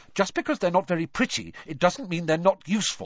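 snapping, high-pitched, sharp delivery. Answering another speaker's sarcastic remark, snapping back. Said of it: "Hermione snapped".

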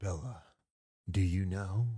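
slow, confiding, conspiratorial, secretive tone. Imitating another speaker asking a friend: secretive question. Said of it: "In that voice, you're like".

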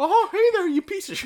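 very high, squeaky cartoon voice. Imagining a voicemail greeting done in a cartoon voice: Mickey Mouse voice. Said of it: "I've thought about doing the Mickey Mouse voice as like my ringtone".

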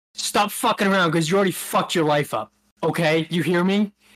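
put-on aggressive, confrontational scolding tone. Retelling what a woman said to him in public, acting out her in-your-face scolding. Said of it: "she's like in my face".

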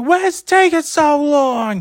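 very high, shrill, shrieking, screaming holler. Telling about a woman waiting at a garage, imitating a woman yelling. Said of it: "She's sitting there like yelling and screaming".

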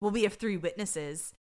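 plain

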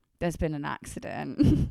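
normal talking voice

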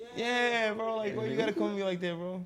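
high, loud, mock-offended rant.

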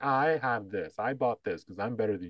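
put-on smug bragging tone. Imitating people pumping themselves up: imitating a smug boast. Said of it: "pump themselves up by saying".

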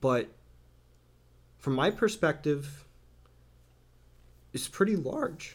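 breaking, catching voice, cracking up high. Talking about feeling unworthy of support, the speaker's voice breaks: voice breaking. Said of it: "sorry, my voice broke".

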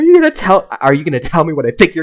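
put-on yell. Retelling a phone call where he yelled at the caller, retelling a yell. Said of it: "and then I yelled at him apparently".

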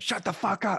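very high-pitched, playful, joking tone. Retelling a conversation, the speaker quotes their own reply to him: retelling a joking retort. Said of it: "I jokingly said".

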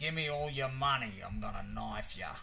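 slipped into an Australian accent. Trying an american accent on request, the speaker lands in an australian accent. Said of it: "so that's Australian too".

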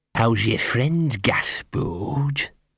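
slow, deep, rasping, hoarse whisper with grit. Reading a story aloud, a dog in an alley greets Gaspode: deep hoarse whisper. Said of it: "a deep, hoarse voice, a kind of whisper with sand in it".

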